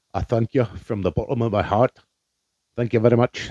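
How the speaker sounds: awful, botched, terrible put-on Scottish accent. Thanking a podcast listener in scotland: terrible scottish accent. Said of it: "the absolute worst fucking Scottish accent".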